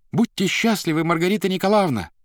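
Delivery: high-pitched cry, shouted loudly. Natasha runs in through the open door to Margarita, shouting. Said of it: "всплеснула руками и закричала Маргарите".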